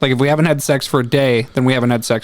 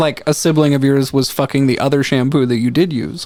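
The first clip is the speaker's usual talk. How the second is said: ordinary talk, nothing marked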